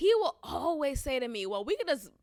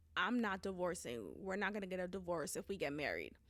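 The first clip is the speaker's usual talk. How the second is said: very quiet, low, hushed, grave serious voice; 6 semitones lower, 10 dB quieter than usual. Retelling what a partner said while they were dating, imitating his serious voice. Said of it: "he would say with such a serious voice".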